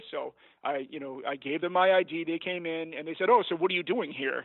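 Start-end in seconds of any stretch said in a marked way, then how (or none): 3.3-4.4 mock-accusatory tone. Retelling how they questioned him after he handed over his id, mock-accusatory tone. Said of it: "in a pretty accusatory tone".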